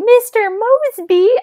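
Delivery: piercing, very high, loud shriek. Retelling how a character calls out a name: imitating Whit yelling. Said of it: "Whit just yells".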